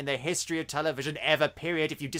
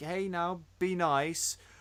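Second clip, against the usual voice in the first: put-on polite gentle voice, quieter; 6 dB quieter than usual. Describing a TV villain's manners, imitating the Mayor, polite and gentle. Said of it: "treats everyone with respect and politeness and is like".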